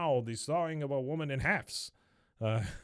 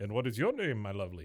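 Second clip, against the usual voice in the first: put-on vampire-like voice with Slavic accent; 3 semitones lower than usual. Retelling the magician greeting a woman coming on stage: Dracula-like voice. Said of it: "he sounds like Dracula".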